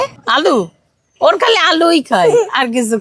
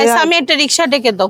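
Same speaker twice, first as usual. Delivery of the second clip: normal talking voice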